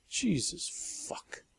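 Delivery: whispered mutter under the breath. Narrator reading a woman's aside after she faces Sally, quietly to herself. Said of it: "quietly to herself she added".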